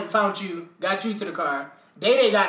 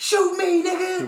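put-on drunk yelling, higher pitch; 11 semitones higher than usual. Retelling a shooting at a party, imitating Terrence yelling. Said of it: "Terrence is yelling".

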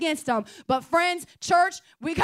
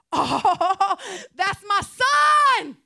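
put-on excited voice, higher and louder; 4 semitones higher, 5 dB louder than usual. Retelling a father spotting his returning son: imitating an excited father. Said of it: "And he gets excited".

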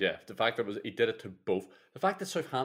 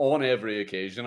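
"every occasion" stressed loud and emphatic. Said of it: "I stress that".

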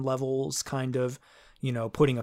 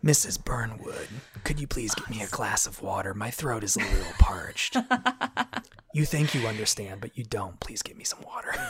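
gravelly, raspy, menacing, threatening villain voice; 3 semitones lower than usual. Speaker imitates a voice-acted character praised as threatening: gravelly threatening villain impression. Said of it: "You've got a career as his understudy".

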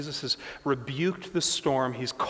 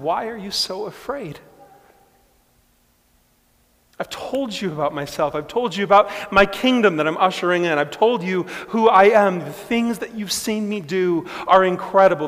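gentle, kind, tender tone with raised pitch; 5 semitones higher, 7 dB louder than usual. Retelling Jesus turning to the afraid ones, as Jesus, gentle and kind. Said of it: "in a very gentle, kind way".

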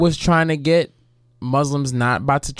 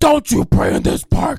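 furious, hostile, angry scolding tone; 9 semitones higher, 4 dB louder than usual. Retelling a woman ordering men out of a park: imitating an angry woman. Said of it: "so angry at them".

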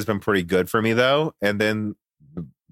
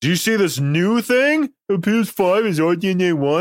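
put-on mocking dumb voice, pitched very high; 9 semitones higher, 3 dB louder than usual. Speaker quotes people in the comments, using a dumb mocking voice. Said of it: "I use that dumb voice".

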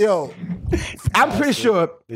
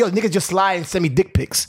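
plain

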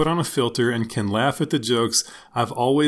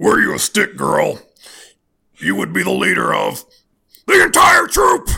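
loud, rough, ranting radio host voice; 8 semitones higher, 7 dB louder than usual. Reading aloud one of three poems Becca sent; Alex Jones impression. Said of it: "I'm going to read this one as Alex Jones".

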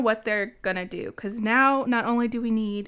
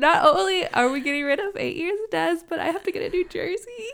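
high, teary, half-joking crying voice; 8 semitones higher than usual. A podcast host, losing a player after eight years, speaks while crying. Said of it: "I'm literally crying".

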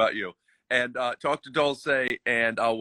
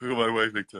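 muttered, barely-there soft mumble under the breath; 3 semitones lower, 5 dB quieter than usual. Retelling what the mom said off-screen: imitating someone mumbling. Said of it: "she mumbled".

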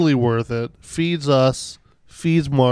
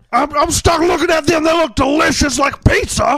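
put-on ranting voice, higher pitch; 13 semitones higher, 4 dB louder than usual. Doing an impression bit about neighbors and frogs: Alex Jones impression. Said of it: "I've probably done an Alex Jones or two".

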